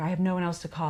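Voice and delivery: put-on crying, tearful tone. Retelling a book scene where she calls a friend: imitating someone crying. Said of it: "and she's crying and like".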